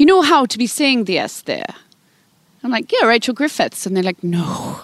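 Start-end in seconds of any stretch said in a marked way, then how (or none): 0.0-1.7 bad put-on Welsh accent with swooping pitch. Quoting what someone told them about a name, in a terrible put-on welsh accent. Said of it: "I'm going to do a terrible accent right now, of which I'll be slaughtered by any Welsh people".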